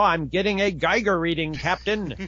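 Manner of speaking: put-on thick, over-enunciated English accent. Mimicking dubbed movie dialogue, in an exaggerated over-enunciated english accent. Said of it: "it's that over-enunciated".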